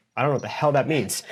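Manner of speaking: usual speaking voice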